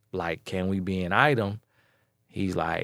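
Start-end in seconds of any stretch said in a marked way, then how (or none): none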